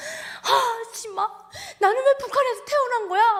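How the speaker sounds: very high, tearful sobbing lament. Retelling crying on the bus after leaving: retelling own crying words. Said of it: "막 울면서".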